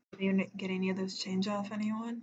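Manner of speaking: speaking very quietly, hushed. Asking her in character about chains, speaking very quietly. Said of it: "very quietly and speak".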